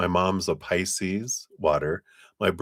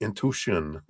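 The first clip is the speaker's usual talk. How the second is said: put-on French accent, much quieter; 6 dB quieter than usual. Tarot reader repeating a word from the card reading, in a french accent. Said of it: "I was trying to do it like with my French accent".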